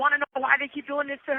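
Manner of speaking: put-on upset voice. Retelling a question asked during an argument: imitating someone upset. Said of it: "he's really upset".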